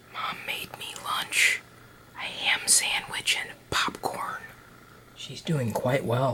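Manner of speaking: hushed whisper. Giving a quick update on how Mom is doing: whispering. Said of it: "why I'm whispering".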